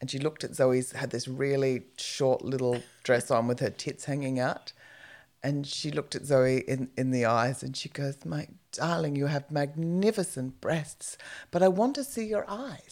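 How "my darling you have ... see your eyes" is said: cute, affectionate, sweet and tender grandma voice. Retelling what a friend's grandmother told a young woman, imitating a grandmother's cute delivery. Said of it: "it was so cute the way she said it".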